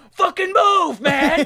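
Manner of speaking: full-throated, very high, top-of-lungs screaming. Retelling how Joe yelled at a man stepping behind the reversing car: imitating Joe screaming. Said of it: "screaming at the top of his lungs".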